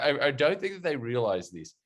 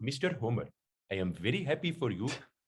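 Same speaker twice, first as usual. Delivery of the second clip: put-on Indian accent, spoken more quietly; 4 dB quieter than usual. Describing a Simpsons character's voice, the speaker quotes him in Apu voice. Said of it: "kind of voice".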